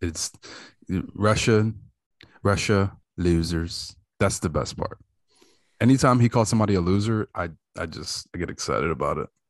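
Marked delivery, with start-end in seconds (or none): 0.0-3.9 very slow, deliberate, each word drawn out. Adding to a Trump impersonation: Trump impersonation. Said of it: "You can't do a Trump impersonation without saying losers".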